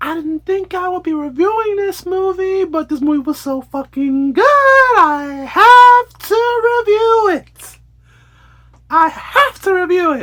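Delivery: very high squeaky cartoon voice, stretching the "i". Reviewing the movie Smile 2, say this in a squeaky cartoonish high voice. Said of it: "Calm down with the Mickey Mouse voice".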